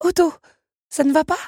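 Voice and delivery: anxious, worried, very high pitch. A young woman sees an automaton clutch his silk heart, worried. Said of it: "S'inquiéta Belle".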